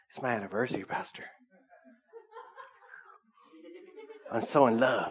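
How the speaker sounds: overjoyed, all-happy tone, wide swooping pitch. Pastor retells his brother's anniversary words to the congregation, imitating him all happy. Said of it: "He goes all happy".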